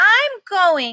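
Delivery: resolute, insistent voice. Reading a story aloud, the narrator voices Ruby, most determined voice. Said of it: "Ruby says in her most determined voice".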